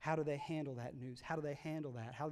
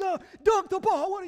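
very loud, very high, shrill hollering; 16 dB louder than usual. Retelling coaching kindergartners at basketball: imitating own yelling. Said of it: "I'm yelling at kindergartners like".

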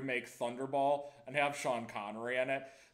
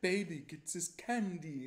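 strange put-on Italian accent, drawn out; 4 semitones higher than usual. Quoting a character offering heroin to a US officer: weird Italian accent. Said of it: "she says in that w-, weird, like, Italian accent".

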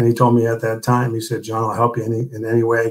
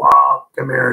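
raspy, mock yelling; 3 semitones higher, 4 dB louder than usual. Retelling how someone called out by the pool: imitating someone yelling. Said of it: "And so he yelled".

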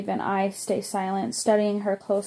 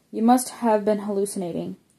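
ordinary delivery, nothing marked

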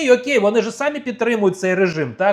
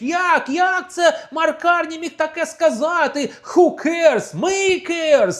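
put-on deliberate ranting holler, high and drawn-out; 8 semitones higher than usual. Retelling how the conservative leader jumped onto the parliament podium, imitating someone shouting. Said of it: "він вискочив на трибуну в парламенті і кричить".

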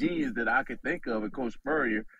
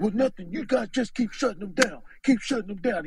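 strong raspy voice, much higher pitch; 9 semitones higher than usual. Retelling what the coach told the team during a game, imitating Coach Stu's raspy voice. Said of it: "He got this strong, raspy voice".

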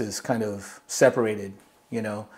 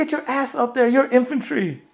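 mock screaming, higher, faster; 14 semitones higher than usual. Speaker retells a man screaming in his ear, retelling a screamed order. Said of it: "he's just screaming in my ear".

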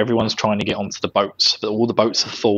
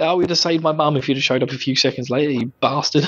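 ordinary talk, nothing marked

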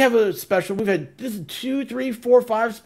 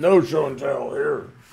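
put-on deep voice, pitched lower; 7 semitones lower than usual. Joking with the group: put-on deep voice. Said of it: "That was his deep voice".

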